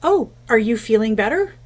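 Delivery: very cheery, bright, sunny, chipper voice. Retelling mom asking dad in the parking lot how he feels, mock-cheery voice. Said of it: "asked in a very cheery voice".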